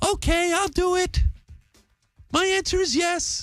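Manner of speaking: very high, slow, gaga starry-eyed gushing, deliberately bad. Retelling how Lily accepted a proposal: bad impersonation of Lily. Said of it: "I know that's a bad impersonation".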